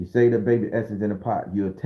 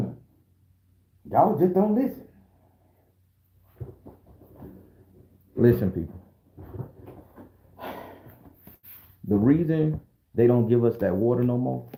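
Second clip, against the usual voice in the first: put-on knowing old Southern elder's voice. Imitating how Southern old folks make a point: imitating Southern old folks making a point. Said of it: "Let me do like the old folks when they make a point".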